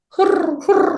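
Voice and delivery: wide, breathy cooing like a pigeon.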